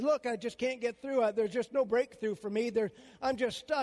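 ordinary talk, nothing marked

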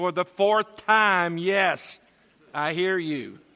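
exasperated, fed-up tone. Telling the wife's answer after being asked four times: irritated voice. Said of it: "responded with irritation in her voice".

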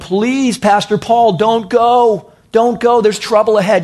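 mock-tearful begging. Speaker acts out families on the beach pleading with Paul, imitating crying pleas. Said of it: "And they're crying".

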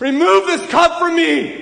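very high, very loud crying out. Retelling Jesus's prayer to God from Hebrews, acting out a loud cry. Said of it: "He's not whispering this. He's crying".

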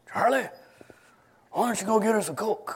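put-on old chain-smoker rasp. Retelling what his grandfather used to ask him, in a raspy smoker's voice. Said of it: "he'd say in his raspy smoker's voice".

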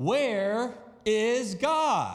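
loud, stern, swooping voice. Reading a story aloud, a clergyman asking a third time: raised voice, even louder. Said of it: "raised his voice even more".

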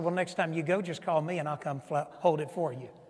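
dry, sarcastic, falsely helpful tone. Retelling a reply to a complaining church leader: imitating own sarcastic reply. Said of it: "being the sarcastic person that I am".

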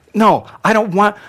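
loud, high-pitched, insistent tone.

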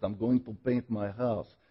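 put-on broken English, Russian-sounding accent. Speaker retelling a man's answer in the locker room, in broken English. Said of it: "in his broken English".

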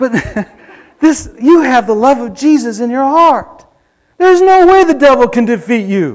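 getting excited. Preaching to listeners about the love of Jesus in their hearts, getting excited. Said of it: "I'm getting excited".

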